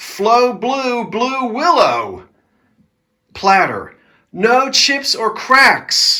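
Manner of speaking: sudden loud shout rising in pitch. Describing items one by one, the speaker suddenly starts shouting. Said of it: "I don't know why I'm shouting all of a sudden".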